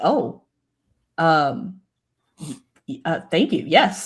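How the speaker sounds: slow, stunned, flustered stammering. Voicing a stunned character who is offered territory: stunned, stammering thanks. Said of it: "Her eyes go wide".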